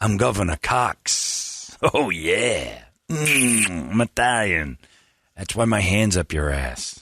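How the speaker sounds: put-on heavy vocal fry with drawn-out I'm. Playing Governor Cox as an Italian, Spencer Cox bit with vocal fry. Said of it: "You got that vocal fry".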